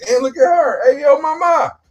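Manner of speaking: very high-pitched voice. Acting out a man calling to a woman: imitating a catcaller. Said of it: "Be like".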